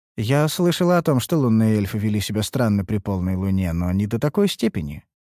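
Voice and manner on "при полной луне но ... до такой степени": ordinary delivery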